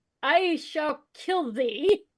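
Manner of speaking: put-on dramatic, theatrical, old-stage style declamation, battle-cry force. Calling out a line as the character in the game: yelling out in character. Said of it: "I yell out".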